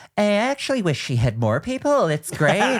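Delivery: mocking aside delivery.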